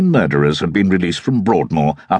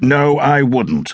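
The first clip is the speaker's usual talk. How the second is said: decisive, no-nonsense, firm, pitched up; 6 semitones higher than usual. Wilt answers Braintree's request to mark his exam papers, firmly. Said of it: "Wilt said firmly".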